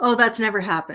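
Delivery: dry, sarcastic tone. Answering a question about wasted meetings, sarcastic. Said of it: "I'm being sarcastic".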